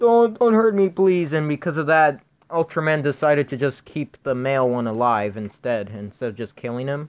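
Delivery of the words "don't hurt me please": loud, high, tearful begging, sobbing out the words. Retelling how the monster on the floor begs Ultraman, imitating someone crying. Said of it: "he's crying".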